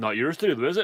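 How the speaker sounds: ordinary delivery, nothing marked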